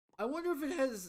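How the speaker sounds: breaking, high voice. Chatting about how their channel's series has done, voice cracking. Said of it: "my voice cracked yet again".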